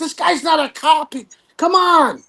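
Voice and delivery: high, put-on, loud yelling. Retelling a man in a crowd yelling back: imitating someone yelling back. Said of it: "He's yelling back".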